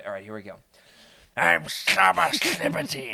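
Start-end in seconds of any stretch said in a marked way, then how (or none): 1.4-3.1 guttural, gnarly rasp dragged up from the throat. Attempting the audiobook voice of the character Saba: guttural, gnarly Saba voice. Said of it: "it's very guttural and gnarly".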